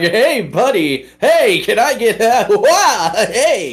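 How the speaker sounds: very slow, high, swooping sing-song sarcasm, drawn-out hey. Showing how to sound sarcastic, in a pitched-up sarcastic voice. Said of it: "I kind of pitch up and I start going like".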